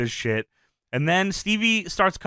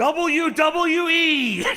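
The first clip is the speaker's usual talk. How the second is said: mock shrill, very high yell; 10 semitones higher than usual. Retelling a wrestling match, a wrestler on the stairs yells out; imitating Dreamer yelling. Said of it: "so he looks out and yells".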